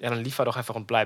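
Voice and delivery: ordinary delivery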